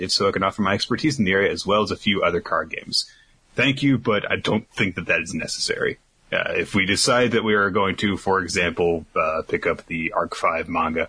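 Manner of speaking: usual speaking voice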